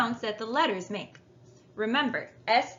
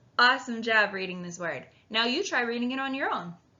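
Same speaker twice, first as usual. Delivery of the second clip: ordinary delivery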